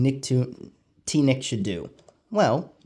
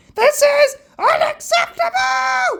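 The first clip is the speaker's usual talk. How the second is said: very high, loud, shrill cartoon squawk; 8 dB louder than usual. Complaining about a TV schedule, imitating the Adventure Time lemon guy. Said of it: "like that lemon guy from Adventure Time".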